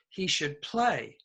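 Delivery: the word play hit firmly, carrying the stress. English lesson on stressing the last verb: stress on play. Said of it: "and so play is stressed".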